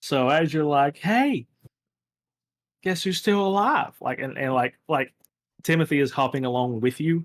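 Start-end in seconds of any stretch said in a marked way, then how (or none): 1.0-3.9 put-on bratty, high, childish taunting tease. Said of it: "seven-year-old that's trying to, like, annoy you".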